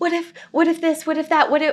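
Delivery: eager, high, rushed, tumbling excited chatter. Retelling a house viewing, quoting the buyer: imitating an excited client. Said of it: "you can tell she's just so excited".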